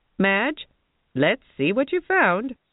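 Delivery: loud, booming, high-pitched bellow. A woman calls to a friend inside the dressing room, bellowing. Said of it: "Lila Mae bellowed".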